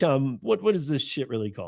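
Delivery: ordinary delivery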